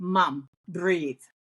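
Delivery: normal talking voice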